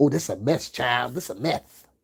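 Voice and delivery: lisped s sounds in the word "mess". Mocking what a podcaster says on his podcast: imitating Perry with a lisp. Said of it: "With that lisp".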